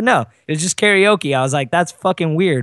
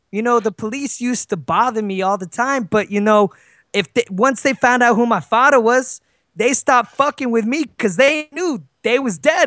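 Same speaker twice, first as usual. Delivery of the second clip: put-on, high, older woman's Brooklyn accent; 8 semitones higher than usual. Retelling what an old lady from Brooklyn said: imitating her Brooklyn accent. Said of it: "Look at the accent".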